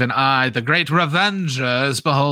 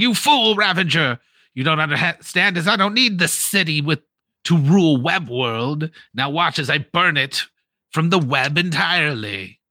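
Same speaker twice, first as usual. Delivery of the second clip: loud, calling-out dragon villain voice; 4 semitones higher than usual. Voicing a dragon flying off with the king: dragon villain yelling. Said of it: "just yelling".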